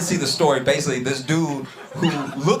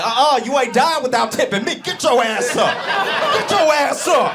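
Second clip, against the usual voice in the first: very high-pitched, pushy, demanding server voice; 11 semitones higher than usual. Acting out a server refusing to let a diner die untipped: imitating a server demanding a tip. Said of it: "his server be like".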